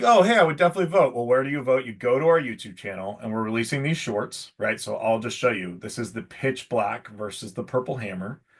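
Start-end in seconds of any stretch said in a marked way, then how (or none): 0.0-1.1 high, fast, eager exclamation. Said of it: "you're like".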